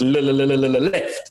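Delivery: repeated le- stutter before left, heavy stutter. Retelling how the navigator called out directions: imitating a stutter. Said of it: "this man also suffers from one incredible stutter".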